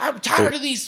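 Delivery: acted-out shrill, very high, fed-up angry cursing. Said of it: "she starts just cursing".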